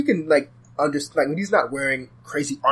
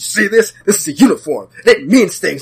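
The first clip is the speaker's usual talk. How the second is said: very angry, loud outburst; 3 semitones higher, 5 dB louder than usual. Retelling a comic character's reply about his costume: imitating someone angry. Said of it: "he gets very angry and goes".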